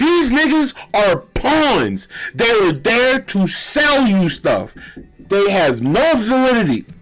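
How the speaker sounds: shouting. Live on stream, talking at the computer: yelling at the computer. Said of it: "I'm just yelling at the computer".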